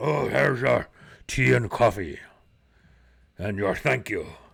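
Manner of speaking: rough, creaky, roughened voice of a huge orc. Game master voicing the innkeeper bringing tea and coffee, Gundar the orc innkeeper voice. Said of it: "a rather large orc, um, full set of fangs, uh, wearing a what looks to be what you would expect a maybe an innkeeper, / And this guy's got to be like seven six, / And he steps up and kind of gives you".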